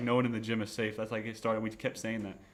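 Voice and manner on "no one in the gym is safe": plain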